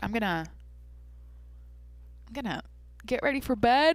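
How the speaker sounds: speaking through a yawn. Signing off a podcast for the night, speaking through a yawn. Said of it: "sorry for yawning".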